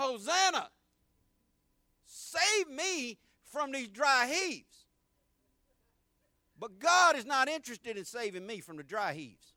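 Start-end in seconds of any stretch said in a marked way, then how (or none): 0.0-4.8 mild, slow, drawn-out pleading cry. Speaker retells begging for help over the toilet bowl, retelling a scream. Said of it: "I'm screaming".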